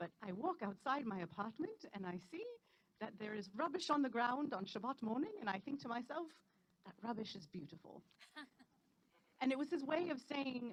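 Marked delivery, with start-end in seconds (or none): 0.0-8.0 clumsy, poor put-on British accent. Quoting a yeshiva teacher's lesson about Shabbat, poor British accent imitation. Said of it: "pardon my poor attempt at his accent".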